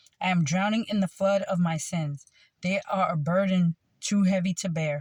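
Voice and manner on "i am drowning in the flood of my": plain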